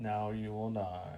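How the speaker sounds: low, slow droopy drawl, voice-modulated sound. Suggesting a voice for a droid model: droopy dog voice modulator. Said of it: "a droopy dog kind of voice modulator".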